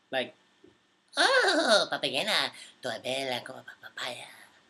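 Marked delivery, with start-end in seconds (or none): 1.1-4.2 swooping, drawn-out cartoon-creature nonsense singing. Answering a viewer who asks for it, doing a Minion impression. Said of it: "can you do a Minion impression?".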